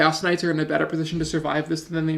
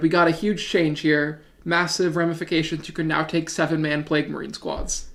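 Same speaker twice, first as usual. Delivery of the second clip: normal talking voice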